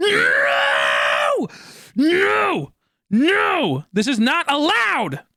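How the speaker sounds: very high, rising, swooping shout. Finding yet another one in the exact same spot, yelling. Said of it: "Sorry for yelling".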